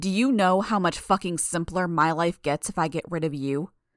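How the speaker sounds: usual speaking voice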